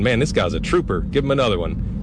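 ordinary talk, nothing marked

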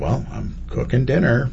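forced, through clenched teeth. Retelling his answer when his wife asks what he's doing, through gritted teeth. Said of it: "Gritted teeth".

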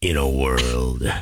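very deep, low movie-trailer announcer voice. Asked whether they could do movie trailer work, trying a movie trailer voice. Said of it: "that kind of movie trailer stuff".

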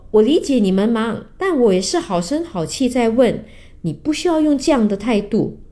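ordinary delivery

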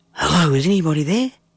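whispering. Reading a story aloud, a boy asks who is there: whispering. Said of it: "I whispered".

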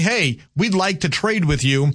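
normal talking voice

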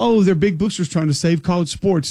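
ordinary delivery

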